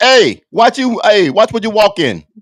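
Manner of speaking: put-on very high-pitched, loud New Jersey accent. Quoting a coworker from New Jersey, in a New Jersey coworker impression. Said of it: "a guy that's from New Jersey".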